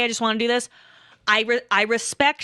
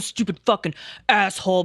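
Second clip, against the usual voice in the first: mock muttering under the breath; 4 semitones lower than usual. Retelling what a man said as he got up to leave; imitating someone muttering under breath. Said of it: "I heard him mutter under his breath".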